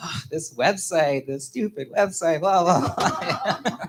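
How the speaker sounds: slow, dragging, upset griping. Retelling own reaction to a website: imitating own upset voice. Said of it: "I was so, like, upset".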